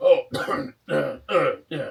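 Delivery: very loud, slow, rough, hiccup-broken stammer. Voicing Trovis after a player passes a deception check: Trovis voice, hiccuping. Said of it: "he hiccups and he's like".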